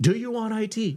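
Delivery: mock, very high, blurted yell, pitch rising. Joking about cold calling by phone: imitating own past yell. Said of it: "I rang the phone and I yelled".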